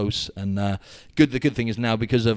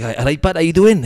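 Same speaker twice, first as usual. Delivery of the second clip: very loud, high put-on Welsh accent; 8 semitones higher, 9 dB louder than usual. Retelling how a stranger greeted him: imitating a welsh accent. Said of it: "Welsh accent".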